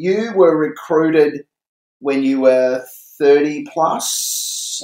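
pointed, slow, drawn-out delivery.

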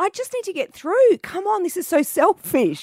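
shouting. Retelling pushing a pram past protesters, retelling own yelling at them. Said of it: "I was yelling at them going".

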